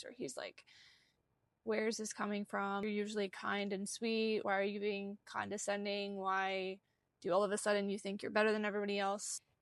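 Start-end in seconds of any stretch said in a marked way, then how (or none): none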